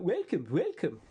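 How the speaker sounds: put-on accent from Lapland. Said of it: "Dead-on Lapland accent".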